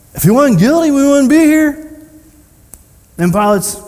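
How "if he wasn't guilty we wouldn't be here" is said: loud, high, heavy sarcasm, acted out. Retelling the accusers' reply to Pilate, imitating a sarcastic retort.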